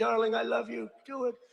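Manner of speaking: mock proud mother voice, cheering and screaming. Retelling a woman lifting weights, imitating her mother screaming from the front. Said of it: "is screaming".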